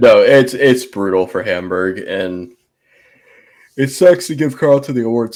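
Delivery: speaking through a yawn. A speaker talks after a long day, yawning. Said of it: "Sorry, I'm yawning".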